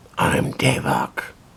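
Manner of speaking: rough, creaky, rasping put-on hero voice. Artist presenting a character to viewers, speaking as Davok in a Batman-like voice. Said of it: "It's like the Batman voice".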